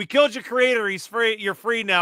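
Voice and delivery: high, shouted yelling. Retelling how Quiet calls out to Axel: imitating Quiet yelling. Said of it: "Quiet just yells".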